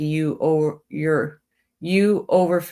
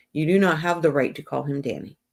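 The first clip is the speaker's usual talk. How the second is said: ordinary talk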